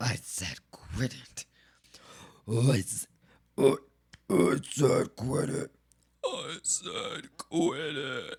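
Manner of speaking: eerie doubled monster voice, very low, very slow. Speaker repeats what they said to Swampy: double eldritch voice. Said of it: "quit it in a double voice. Double Eldritch voice?".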